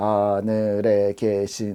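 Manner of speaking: very slow, each word stretched, one at a time. Joking about how to read a book slowly: slow, drawn-out words. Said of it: "그냥 천천히 읽으면 될까요? 하늘에 계신 뭐 이런 식으로 읽어야 될까요?".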